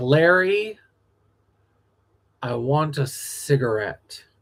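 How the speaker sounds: put-on cold sarcastic voice. Retelling a moment from a musical revival: imitating cold sarcastic Joanne. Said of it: "unflappable, cold, sarcastic Joanne".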